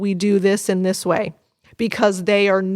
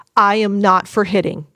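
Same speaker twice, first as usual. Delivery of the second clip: firm, clear voice. Setting a limit on hitting, showing the words to use, firm tone. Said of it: "with a firm tone".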